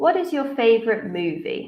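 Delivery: pitch falls down on "movie". Teacher demonstrating a WH question for students to judge, with falling intonation. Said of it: "we use a falling intonation".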